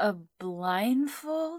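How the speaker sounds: drowsy, groggy, half-awake, very high pitch. Peering out from under the pillow, she asks him a question, groggy. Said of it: "she asked groggily".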